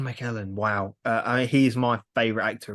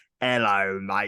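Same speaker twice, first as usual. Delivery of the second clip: put-on cockney accent, actor voice, lower pitch; 3 semitones lower than usual. Joking about Michael Caine in the goblet of fire, in a Michael Caine impression. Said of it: "Sorry, sorry, Michael".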